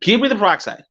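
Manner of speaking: put-on pissed tone. Recounting a pharmacy visit to the listener, retelling an angry demand. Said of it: "I was just fucking pissed".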